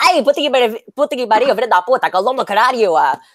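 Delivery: mock angry cursing. Describing their own habit when on the road, imitating road-rage cursing. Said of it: "I have such bad road rage and I'll".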